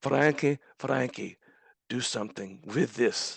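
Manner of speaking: put-on beautiful Polish-accented English. Quoting a man handing over his speech after a ceremony: Polish accent. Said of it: "he says in this beautiful Polish accent".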